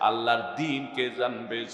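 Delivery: soft, hushed, weeping, pleading tone.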